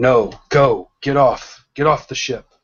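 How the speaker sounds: firm, insistent, urgent commanding tone. Voicing the master ordering the students to flee: shouting an order to flee. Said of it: "you shout".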